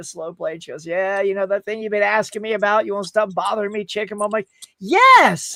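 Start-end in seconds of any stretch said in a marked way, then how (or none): none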